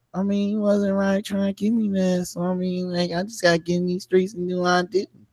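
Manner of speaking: soft, self-pitying, whiny victim voice. Speaker mocks a man who cheated, mocking a whiny victim voice. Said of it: "he got that whiny voice where he make everything like I'm the victim".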